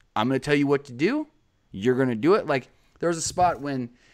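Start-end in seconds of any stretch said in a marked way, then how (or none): 0.2-2.5 commanding promo-style put-on voice. Retelling a WWE promo: imitating Drake Maverick sounding in charge. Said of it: "sounded like someone that was in charge".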